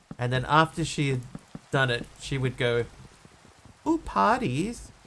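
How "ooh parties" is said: tiny, very high, cutesy little voice. Retelling what a woman in the office said after belching, small, cutesy voice. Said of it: "like with this little cutie voice".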